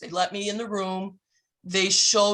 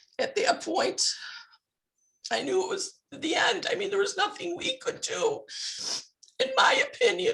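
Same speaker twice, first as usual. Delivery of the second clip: tearful, crying, very high and strained voice; 12 semitones higher, 4 dB quieter than usual. Speaker talking about their father's death and a legal dead end; crying while speaking. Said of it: "I'm sorry for crying".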